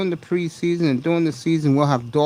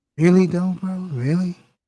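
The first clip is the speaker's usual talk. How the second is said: scoffing, sarcastic disbelief on "really"; 4 semitones higher than usual. Showing how they like to say the phrase: sarcastic "really". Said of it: "I'm being sarcastic".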